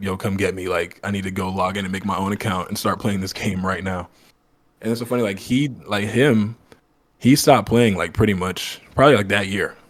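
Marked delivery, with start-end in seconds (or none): none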